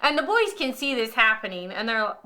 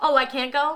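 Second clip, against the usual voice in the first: put-on sassy voice; 3 semitones higher than usual. Imitating a friend's dad on his ski boat: imitating Steve with attitude. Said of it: "With his little attitude".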